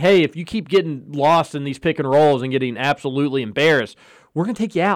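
plain

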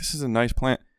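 ordinary talk, nothing marked

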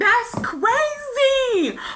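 high, disbelieving shout through laughter.

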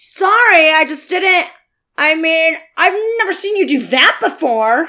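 put-on bratty twelve-year-old twerp voice. Reading a scene as Zack, a twelve-year-old twerp: twelve-year-old twerp voice. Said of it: "I'll do that kind of voice".

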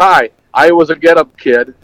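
usual speaking voice

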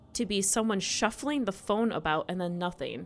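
plain reading voice

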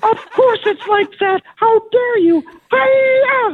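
pig puppet character voice. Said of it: "the Piggy and Kermit were great".

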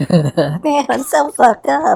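very high, squeaky, slow helium voice. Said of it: "I'm gonna heighten your voice right there".

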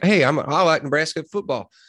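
really strong, slow Texas drawl. Describing nebraska football backers, the speaker voices one of them in a texas accent. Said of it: "that was really Texas accent".

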